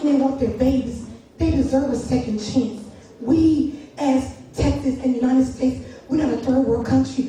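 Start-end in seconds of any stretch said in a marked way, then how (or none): none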